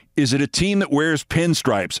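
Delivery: ordinary delivery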